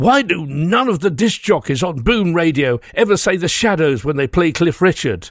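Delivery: fake cross, put-on angry voice. A radio presenter reads out a listener's Facebook comment in a mock-angry voice. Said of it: "I have to read this out in an angry voice".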